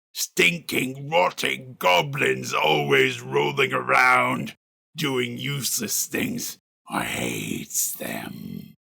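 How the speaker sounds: deep, snarly, rough, slow voice. Speaker demonstrating how to do a character's voice: deep snarly Clarg voice. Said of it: "Clarg tends to be really deep down here".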